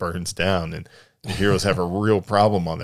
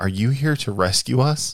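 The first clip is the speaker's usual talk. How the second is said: mock tearful, high, sobbing, breaking-down voice; 6 semitones higher than usual. Retelling a trailer line from a sobbing character: imitating someone sobbing. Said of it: "And she's, like, sobbing".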